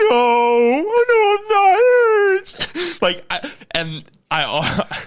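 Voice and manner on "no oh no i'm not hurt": mock crying, very high, loud, very slow, oh drawn out. Retelling crying in the car after getting a shot: mock sobbing. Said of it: "And I just start sobbing".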